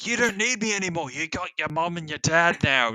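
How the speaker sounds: horribly done put-on teddy bear accent. Retelling the teddy bear's line from the movie, in a horrible Gooby accent. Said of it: "this is a horrible accent".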